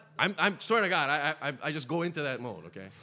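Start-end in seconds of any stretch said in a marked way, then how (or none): none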